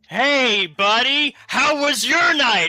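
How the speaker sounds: said loudly in a put-on voice. Greeting another character at the door in character: saying loudly in character. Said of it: "I say loudly".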